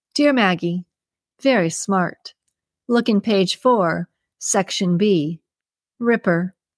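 usual speaking voice

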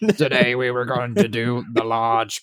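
put-on computer speech voice. Opening the podcast in a Stephen Hawking voice. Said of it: "I am Stephen Hawking".

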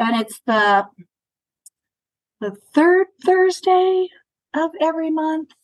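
sounding unsure. Answering a question about when the free workshop runs; uncertain, question in voice. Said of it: "She says with a question in her voice".

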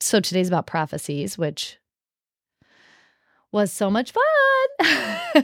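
sarcastic, swooping, drawn-out delivery. Announcing what today's episode is about, in a sarcastic tone. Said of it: "But you sounded sarcastic".

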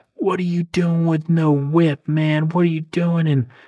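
worked-up man's high, heated yelling. Retelling what a man yelled at you after the accident: imitating a guy yelling. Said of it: "this guy's yelling at me".

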